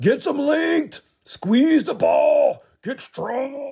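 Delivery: very high, very loud, drawn-out top-of-the-lungs yelling scream. Retelling a workout video blasting in a quiet coffee shop: imitating DDP screaming. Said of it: "screaming at the top of his lungs".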